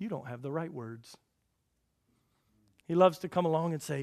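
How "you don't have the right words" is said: soft, low-volume devil's whisper. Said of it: "whisper in your ear and say".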